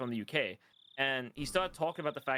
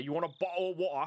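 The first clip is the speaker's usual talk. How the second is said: put-on southern English accent; 4 semitones higher than usual. Showing the stereotypical way people down south in the UK talk: stereotypical southern British accent. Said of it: "the stereotypical fucking fake British thing".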